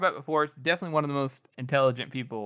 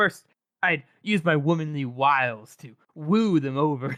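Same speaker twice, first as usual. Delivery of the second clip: mock drunk, dramatic delivery, much slower. Describing a drunk woman's scene, the speaker acts out her line, imitating drunk, dramatic speech. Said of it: "so she's all like dramatic".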